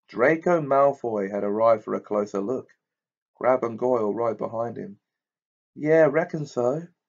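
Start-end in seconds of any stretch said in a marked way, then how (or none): 5.8-6.9 easy, casual, offhand tone, pitched a touch high. A boy answers another boy's remark about his broom: casual. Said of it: "said Harry casually".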